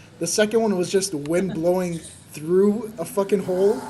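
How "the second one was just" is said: plain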